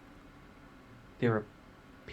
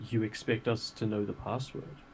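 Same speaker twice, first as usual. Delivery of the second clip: normal talking voice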